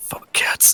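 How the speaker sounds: breathy, whispered, deep demonic voice. Describing a voice from deep within his soul, deep demonic voice. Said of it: "you just hear this like deep demonic voice just go".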